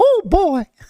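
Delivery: very high, squeaky mouse voice, way up. Asked to keep talking like Mickey on the podcast, doing the Mickey voice. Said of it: "talk like Mickey".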